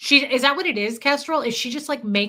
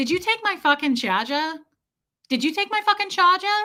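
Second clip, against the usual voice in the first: put-on New York woman's voice, higher pitch; 5 semitones higher than usual. Telling a friend about a woman at the airport, imitating the New York lady. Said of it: "the New York lady".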